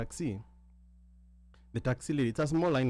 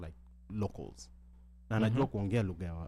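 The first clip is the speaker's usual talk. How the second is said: normal talking voice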